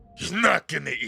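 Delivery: high, loud ringmaster bark, belted out. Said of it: "You hear the ringmaster's voice".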